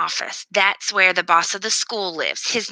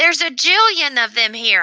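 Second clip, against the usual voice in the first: hollering with delight, high and excited; 7 semitones higher, 4 dB louder than usual. Narrator in the school media center, among the books, excited hollering. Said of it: "I holler very excitedly".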